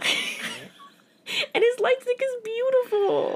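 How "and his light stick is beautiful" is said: high-pitched, tearful crying. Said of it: "I'm getting emotional again".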